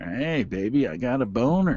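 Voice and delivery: mock, fake seductive, sexy talk. Answering a request to hear some sex talk: mock sexy talk. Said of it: "let's hear some sex talk".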